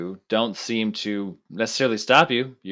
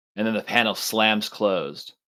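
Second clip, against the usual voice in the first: ordinary talk, nothing marked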